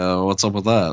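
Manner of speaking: ordinary talk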